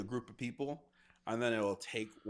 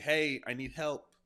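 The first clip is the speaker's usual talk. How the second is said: loud yell, shouted as if from a distance; 4 semitones higher, 5 dB louder than usual. Describing a voice heard in the distance: imitating someone yelling for help. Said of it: "screaming in the distance or yelling".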